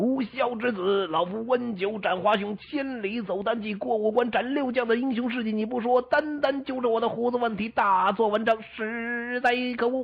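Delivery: thundering, loud, high, angry bellow. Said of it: "大声喝道".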